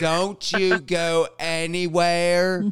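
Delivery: put-on, very slow, drawn-out southern drawl. Quoting a man who has a southern accent, in a put-on southern accent. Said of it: "he's got this, like, southern accent".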